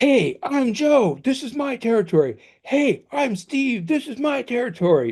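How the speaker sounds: shouting. Acting out two male birds at a territory boundary: yelling at a rival. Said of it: "you can't just sit there yelling at each other".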